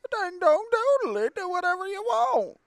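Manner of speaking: shrill, very high, loud, badly done character voice. Reading a character's game lines aloud: bad Coach Z voice. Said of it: "I gave you Coach Z's voice".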